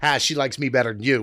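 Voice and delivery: ordinary delivery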